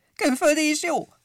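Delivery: sharp, shrill, very high, loud shriek. One of the visitors chimes in about the chocolate, shrieking out. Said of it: "Rikkantott a Pompom".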